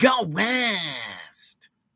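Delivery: punchy, swooping, in-your-face DJ voice, "West" stretched. Showing how one radio voice differed from another, do an in-your-face Chris Cervantes impression. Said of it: "That was Chris Cervantes".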